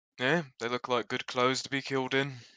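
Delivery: slight, soft whisper. Playing a character who whispers to Jolly about someone's clothes: slight whisper. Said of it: "gonna whisper slightly to Jolly".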